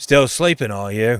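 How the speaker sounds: put-on weathered old seafaring man's voice. Game master voicing an old man coming down the boat's steps, old man character voice. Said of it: "this weathered old human with a long braided beard".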